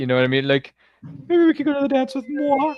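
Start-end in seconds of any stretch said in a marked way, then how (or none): 1.3-2.7 very high, squeaky, badly done put-on voice. Comparing Lorraine to Piggy, does a horrible impression: put-on Piggy voice. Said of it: "This is my horrible impression of Piggy".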